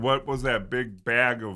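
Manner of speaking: plain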